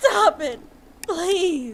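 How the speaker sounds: high, tearful, pleading cry.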